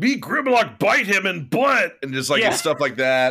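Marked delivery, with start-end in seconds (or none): 0.0-2.0 dumb robot voice, pitched up. Describing the Dinobot characters in a show; Grimlock voice. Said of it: "a dinosaur robot named Grimlock who goes like".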